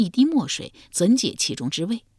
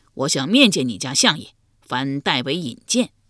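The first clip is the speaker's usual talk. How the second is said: plain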